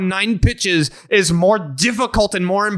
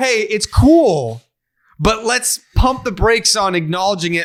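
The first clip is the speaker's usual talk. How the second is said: ordinary talk, nothing marked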